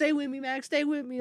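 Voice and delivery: play-acted, tearful, high-pitched crying voice. Retelling a scene where a character holds a friend: imitating Lucas crying. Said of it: "holding Max, and he's, like, crying. He's like".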